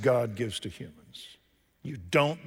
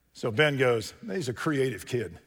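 ordinary delivery

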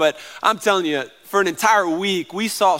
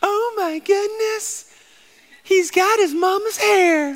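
put-on voice, pitched very high; 14 semitones higher than usual. Mimicking family and friends visiting a new baby, in a high put-on voice. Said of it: "You like the high voice".

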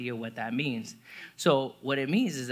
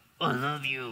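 forced out through clenched jaw and gritted teeth. Showing how speaking to someone sounds when said through gritted teeth. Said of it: "it's never good when you speak to somebody through gritted teeth".

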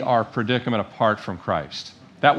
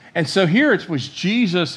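ordinary talk, nothing marked

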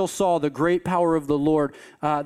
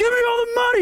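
hollering, very high-pitched; 3 dB louder than usual. Telling a story, acting out a man hollering at a little girl, retelling a yell. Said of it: "And he's just yelling".

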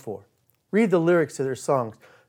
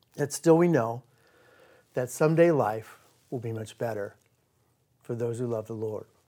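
halting, choked-up voice breaking inside phrases; 3 semitones lower, 4 dB quieter than usual. A speaker talks of trusting God for later while thinking of his father, choked up. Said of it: "I got a little choked up there".

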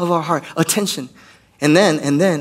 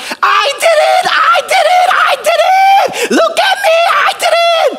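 put-on very high, very loud toddler shriek; 8 dB louder than usual. Describing a three-year-old girl who throws things and shouts: imitating a child screaming. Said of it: "And she'll scream out".

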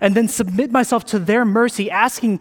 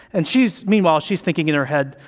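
ordinary delivery

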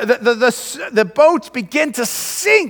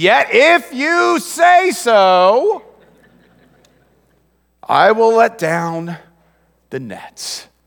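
put-on grudging, reluctant teenager voice, drawn out; 2 semitones lower than usual. Retelling a reply to the Master after a night of catching nothing, like a teenager. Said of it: "It's almost like a teenager saying this".

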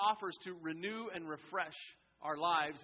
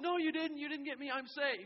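put-on play-acted, high-pitched kid's yell; 10 semitones higher than usual. Describing a playground game, retelling the running kid's answer, imitating a kid yelling back. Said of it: "the kid running yells".

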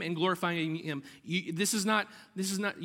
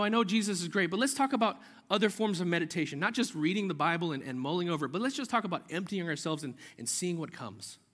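ordinary talk, nothing marked

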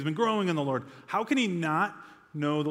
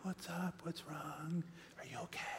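soft, gentle, hushed near-whisper with audible concern; 17 dB quieter than usual. Retelling how the kids' mom answers when woken: imitating a soft gentle mother. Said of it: "very soft and gentle".

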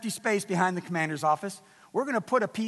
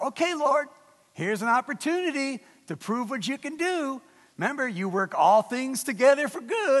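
slightly sarcastic, pitched-up voice; 5 semitones higher than usual. Retelling own words to the Lord in the office: retelling own sarcastic prayer. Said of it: "I was a little sarcastic".

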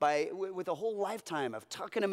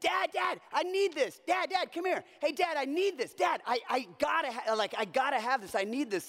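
put-on insistent, high-pitched child yelling; 8 semitones higher than usual. Retelling how the children called out during cartoon commercials: imitating kids yelling. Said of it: "they would be yelling at me".

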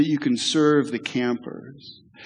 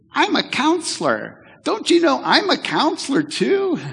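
put-on very high prepubescent little boy's crying voice; 12 semitones higher, 3 dB louder than usual. Retelling what a young counselor cried out, in his little prepubescent voice. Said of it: "cried out in his little prepubescent voice".

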